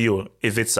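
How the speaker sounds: usual speaking voice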